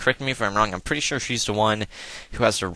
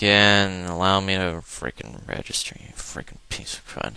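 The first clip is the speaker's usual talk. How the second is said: acted offhand, unbothered, nonchalant delivery. Joking how the character Lance could say his line: pretend nonchalant Lance voice.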